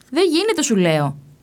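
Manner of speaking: high, nervy, tetchy, irritated, insistent tone. In a quarrel over unloading the pack animals, one man insists; irritably. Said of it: "είπε νευρικά ο ένας".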